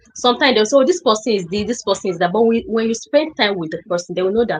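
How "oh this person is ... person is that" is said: ordinary talk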